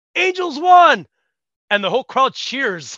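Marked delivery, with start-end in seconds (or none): 0.1-1.0 very loud, very high-pitched shout. Retelling a comedy show, the speaker acts out a crowd member's outburst, retelling a yell. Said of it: "some guy in the crowd jumps up and yells".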